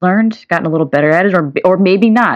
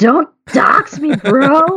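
mock scream, much higher and slower; 9 semitones higher than usual. Describing the man watching TV in the other room, imitating him screaming. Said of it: "start screaming".

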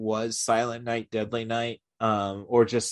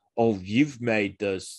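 put-on American accent. Retelling a movie scene with a flamethrower Santa: Malcolm McDowell doing American accent. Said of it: "I'm trying to do the best Malcolm doing an American accent".

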